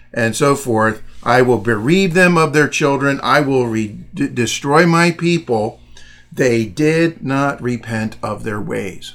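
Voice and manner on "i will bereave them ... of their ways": ordinary delivery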